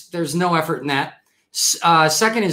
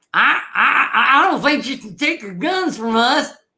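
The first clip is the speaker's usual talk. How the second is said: terrible put-on impression, pitched higher; 8 semitones higher than usual. On National Gun Violence Awareness Day, doing a bad Bubba impression. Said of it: "That's my best Bubba impression".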